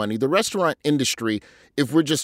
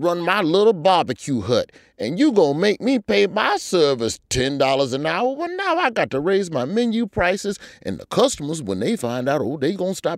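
put-on Southern Mississippi accent, high; 5 semitones higher than usual. Speaking as a small barbecue hut owner, in a put-on Mississippi accent. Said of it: "I don't know why I'm talking like that".

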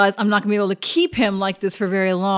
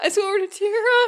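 mock, very high, quavering, trembling voice; 12 semitones higher than usual. Retelling how another player sounded: imitating a trembling voice. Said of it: "I could hear the tremble in her voice".

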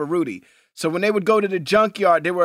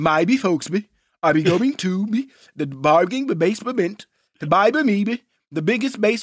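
slurred, garbled, mumbled cartoon voice; 2 semitones higher than usual. Prompted by the other speaker, doing a Mushmouth impression. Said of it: "do your mush mouth impersonation".

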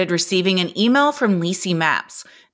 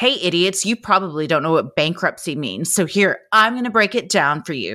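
put-on condescending, talking-down tone; 3 semitones lower than usual. Criticizing someone, mimicking how they talk down to people: mock-condescending. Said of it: "talk so condescendingly to someone like".

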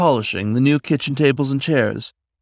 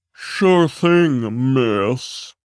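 overdone, exaggerated, fake deep put-on voice. Asked to put the paint cans back in the garage, [name] answers in an exaggeratedly deeper voice. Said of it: "Making his voice exaggeratedly deeper".

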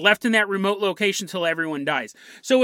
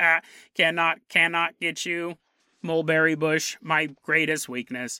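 slow eighties sci-fi movie cyborg voice; 4 semitones lower, 3 dB quieter than usual. Acting out a cyborg chasing a hiker on a trail: 1980s film cyborg voice. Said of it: "this really slow nineteen eighties film cyborg".

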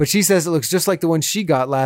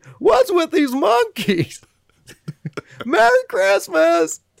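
terrible, very high, swooping, drawn-out drawl; 13 semitones higher than usual. Continuing a terrible impression after the other speaker comments: Jerry Seinfeld impression. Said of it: "almost a Jimmy Stewart kind of thing".

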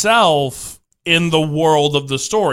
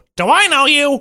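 very high-pitched cartoon character voice; 11 semitones higher, 3 dB louder than usual. Recalling a joke from a cartoon show, doing a Larry the Cucumber impression. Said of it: "Is that your Larry impression?".

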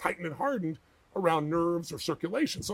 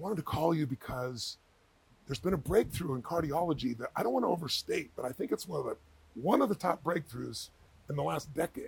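low-key, confiding, hushed, understated stage whisper; 3 semitones lower, 3 dB quieter than usual. Retelling how an understated man phoned Tony with news, imitating his half-whisper. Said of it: "like in a whisper".

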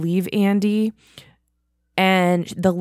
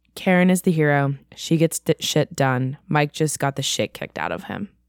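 usual speaking voice

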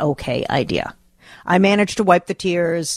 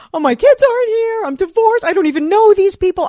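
put-on crying and sobbing, higher and louder; 4 dB louder than usual. Retelling a phone call to a friend from a bathroom floor: imitating own crying. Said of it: "Crying and saying".

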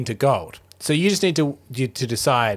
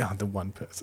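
much softer and lower quiet aside. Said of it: "being like".

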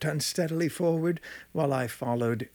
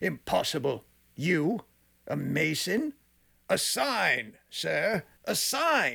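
put-on tipsy drunken speech, slow and pitched up; 6 semitones higher than usual. Reading a story, voicing a man in jester's motley who has been drinking: drunken. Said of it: "for he had been drinking much. The man wore motley. He had on a bright party-striped jester's dress, his head surmounted by the conical cap and bells".

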